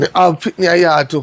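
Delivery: ordinary talk, nothing marked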